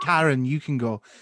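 ordinary talk

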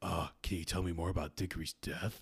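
low, creepy, prying voice. Imitating a creepy person in a crowd asking a question: imitating a creepy onlooker. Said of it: "one creepy motherfucker in the crowd who's like".

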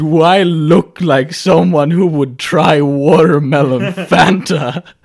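loud, slow, put-on offended, affronted tone. Retelling a dad's reply to his young son: imitating an offended dad. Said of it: "he looked really offended".

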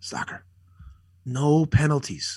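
put-on whisper. Speaker recalls Gretz speaking to him before the puck drop, retelling a whisper. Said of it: "he whispers it".

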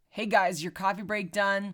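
mock-steady, calm, level, even-keel delivery. Describing a movie character's early scenes, imitating his calm, even-keel tone. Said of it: "It's all very even keel".

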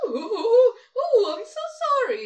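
very high, swooping, over-silly character voice. Retelling the voice imagined for a silly man in a trailer: imagined silly voice for a movie character. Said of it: "the voice my brain put to that, he was kinda like".

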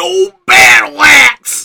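loud, shrill, rough holler, very high. Retelling how a guy started yelling as they walked up: retelling a guy yelling. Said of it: "this guy just starts yelling".

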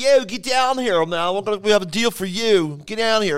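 put-on Philadelphia accent. Speaker imitates local car commercials, Philadelphia accent. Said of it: "you hear the Philadelphia accent".

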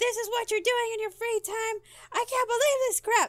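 put-on screaming woman's voice, pitched way up. Retelling how a mother screamed after opening the case: imitating a screaming mom. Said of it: "she just started screaming".

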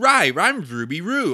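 very loud, high, barking bad cartoon-dog voice. Retelling how kids imitated a cartoon dog: kids imitating Scooby-Doo. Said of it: "they would do something like".

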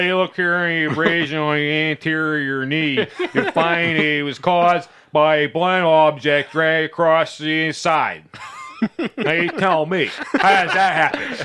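put-on Pittsburgh accent. Imitating a forensic pathologist explaining an injury: Cyril Wecht impression in Pittsburgh accent. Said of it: "That was my Cyril Wecht impression".

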